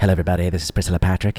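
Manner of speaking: low, sultry, sexy announcer voice. Recalling a radio traffic announcer, imitating Priscilla Patrick's sexy voice. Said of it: "the lady with the very sexy voice".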